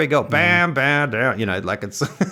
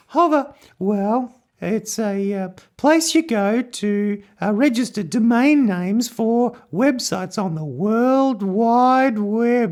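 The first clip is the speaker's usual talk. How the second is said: a high-pitched put-on voice; 9 semitones higher than usual. Asked by the co-host about the sponsor, the host answers: high-pitched voice. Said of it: "Hover in high pitch voices".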